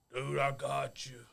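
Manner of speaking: drawn-out, slow, rough dude voice. Retelling what Bear said as he walked into the funeral: Bear impression. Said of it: "my Bear impression".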